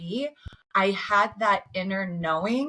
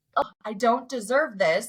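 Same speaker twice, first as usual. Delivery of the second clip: mock, put-on whiny, self-pitying victim voice; 3 semitones higher than usual. Speaker mocks her own past reaction to hard times, in a put-on stupid victim voice. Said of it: "stupid victim voice of like".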